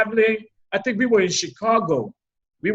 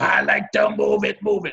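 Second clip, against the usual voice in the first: rough, growling monster voice. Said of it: "give me that Cookie Monster voice".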